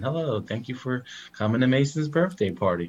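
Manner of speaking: put-on robotic, automated phone message machine voice. Describing autonomous thank-you phone calls after a birthday party; automated phone voice. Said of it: "automated voice saying".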